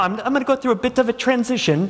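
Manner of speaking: terrible put-on posh English gentleman accent. Mimicking how an english gentleman would talk: terrible english gentleman accent. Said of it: "that's a terrible English accent".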